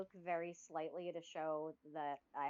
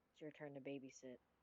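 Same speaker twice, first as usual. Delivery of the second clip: very quiet, hushed half-whisper; 4 semitones lower, 12 dB quieter than usual. Leaning over to half-whisper to a seated character: half-whispering in character. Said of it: "I wanna lean over and whisper".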